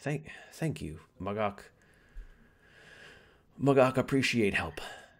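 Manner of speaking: put-on ogre voice. Voicing Mugok in a role-playing game, thanking the players: Mugok two-headed ogre voice. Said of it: "Still speaks like an ogre with two heads".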